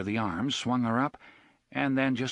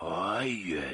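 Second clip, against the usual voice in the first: hoarse, whispered voice; 4 semitones lower, 3 dB quieter than usual. Reading a scene where oy answers quietly: hoarse whisper. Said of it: "in a hoarse whisper".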